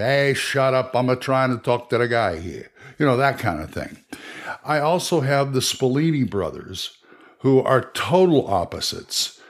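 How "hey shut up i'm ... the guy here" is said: put-on comic Italian accent. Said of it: "one speaks like Chico Marx".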